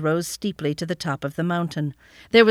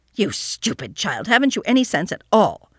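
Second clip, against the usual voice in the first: angry, cross scolding tone; 3 semitones higher than usual. Reading an aunt reprimanding a child, scolding. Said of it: "scolded Detty".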